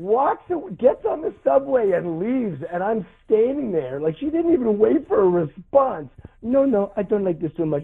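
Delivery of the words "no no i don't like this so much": English with a put-on French Canadian accent. Retelling what a girl said after a movie: french canadian accent. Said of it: "a French Canadian girl with the French Canadian accent".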